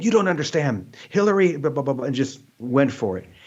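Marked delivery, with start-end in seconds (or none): 0.0-1.6 yelling, pitched higher. Retelling being confronted after a meditation misunderstanding: imitating Marianne Williamson yelling. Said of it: "started yelling at me".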